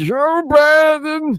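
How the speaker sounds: very high voice squeezed from back of throat. Showing how the voice comes from the back of the throat: Don Junior voice from the back of the throat. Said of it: "talks from, like, the back of his throat".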